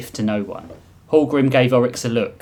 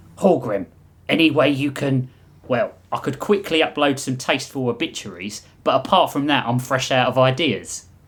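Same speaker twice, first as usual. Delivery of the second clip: ordinary delivery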